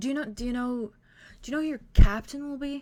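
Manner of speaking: gentle, fidgety, nervous voice, high and quick. Voicing a professor with a nervous tic, reading a file: very soft voice. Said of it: "he very softly says".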